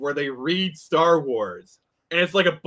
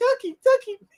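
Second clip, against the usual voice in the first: very high, squeezed little creature voice. Talking about doing Pokemon impressions, demonstrating the Togepi voice. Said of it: "I do like the Togepi voice".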